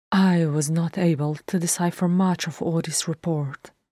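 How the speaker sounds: plain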